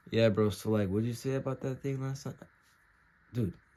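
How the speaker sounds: dead, uncaring, flat, lifeless, uninterested tone. Showing the wrong tone for talking to someone: flat, uninterested tone. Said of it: "You sound dead. You sound like you don't care at all".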